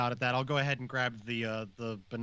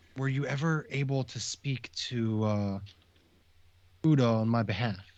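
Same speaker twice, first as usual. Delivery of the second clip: secretive, close, leaned-in confidential aside. Playing his character, he leans close to Zosh at the bar and asks in a very hushed tone. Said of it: "with a very hushed tone go".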